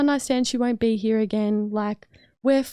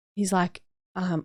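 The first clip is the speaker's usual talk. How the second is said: ordinary talk, nothing marked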